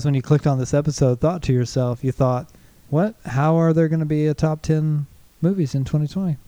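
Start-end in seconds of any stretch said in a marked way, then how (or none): none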